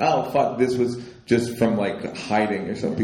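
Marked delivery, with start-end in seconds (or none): none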